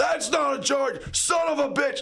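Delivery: acted, shrieking, very high, all-out top-of-the-lungs scream. Retelling how a dad screamed at referees: imitating a dad screaming. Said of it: "scream at the top of his lungs".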